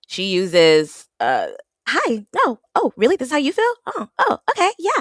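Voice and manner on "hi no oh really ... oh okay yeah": sweet, high-pitched voice. Podcaster imitating how Trinity talks to Bryce on the show; Trinity's soft, sweet voice. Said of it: "a soft, sweet voice".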